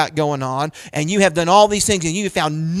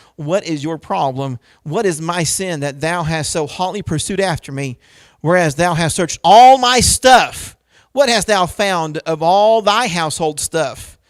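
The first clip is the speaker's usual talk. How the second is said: ordinary talk, nothing marked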